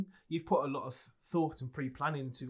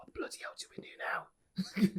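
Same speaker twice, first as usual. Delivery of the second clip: quiet whisper, under the breath; 5 semitones higher than usual. Speaking in character to a fellow party member: whispering in character. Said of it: "And I whisper to".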